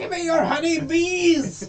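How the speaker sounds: high, loud, feral roar.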